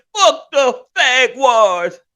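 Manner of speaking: very high, loud put-on voice, dragged out. Doing a bit about the Jaguars in Chibo voice. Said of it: "Let me talk in my Chibo voice".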